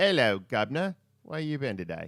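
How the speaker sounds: loud put-on English accent. Showing how people talk in England, the speaker demonstrates an English accent. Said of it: "you talk like this".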